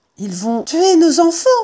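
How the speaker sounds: high, sudden outcry. Woken by digging above their den, a mother fox cries out. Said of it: "s'écria Dame Renard".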